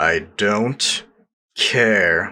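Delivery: through gritted teeth. Narrator reading Vern's curt reply to Vernon, through gritted teeth. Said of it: "said Vern through gritted teeth".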